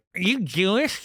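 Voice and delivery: put-on high, geeky, nerdy questioning voice. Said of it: "It's like a nerdy voice".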